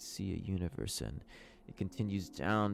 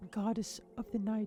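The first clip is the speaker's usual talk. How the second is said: put-on female voice, higher; 13 semitones higher than usual. Voicing a goddess who introduces herself to the players: woman's voice. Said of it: "how do I do a woman's voice?".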